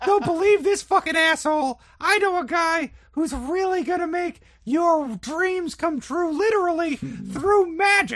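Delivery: very high, very loud, high-pitched yell. Yelling to a crowd in character to win them over: yelling in character. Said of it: "I'm yelling that shit".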